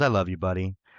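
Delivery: mock muttering under the breath. Retelling a line said during a match: imitating muttering under his breath. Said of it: "just under his breath".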